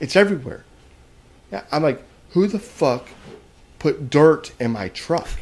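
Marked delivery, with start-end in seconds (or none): 2.3-5.3 slow, furious, aggravated, agitated outburst. Retelling finding dirt in the truck's back seat: imitating own furious outburst. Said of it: "So I'm furious about that".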